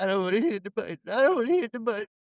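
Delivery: high, half-crying voice on the verge of tears. Recapping a movie scene where another character yells at Petey, imitating Petey half crying. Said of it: "Petey's like halfway crying".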